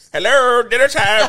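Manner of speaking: loud, high, belted woman's character voice. Joking about the actor talking in the voice at home, in a Madea voice. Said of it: "Just talking in the voice".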